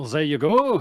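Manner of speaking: loud put-on French accent, slid into suddenly. Game master voices a character with a clipboard handing over a failed stamp: unintended French accent. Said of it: "I don't know why I've become French".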